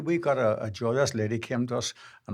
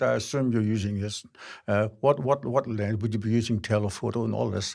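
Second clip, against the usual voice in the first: voice dropped deliberately low, deep and put-on; 2 semitones lower than usual. Retelling how a guy started to quiz them: imitating a deepened voice. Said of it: "he deepened the voice".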